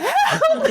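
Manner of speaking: very high, panicked, laughing mock scream.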